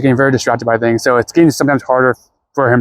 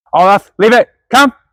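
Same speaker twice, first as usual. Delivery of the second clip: very high raised calling voice; 10 semitones higher, 5 dB louder than usual. Calling Olaf back from a plant he keeps sniffing, raised voice. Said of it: "I had to definitely raise my voice there".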